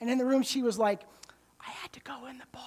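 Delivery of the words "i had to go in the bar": barely voiced, very hushed whisper. Retelling what she said when it was just the two of them in the room: whispered. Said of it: "Like she whispered it".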